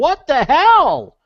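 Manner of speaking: drawn-out high shouting.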